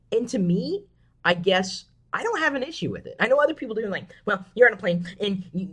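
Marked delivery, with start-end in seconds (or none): 4.2-5.7 huffy, fussing, complaining voice. Mimicking a parent objecting to phone calls on planes: impression of my mom, huffy. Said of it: "that was my impression of my mom".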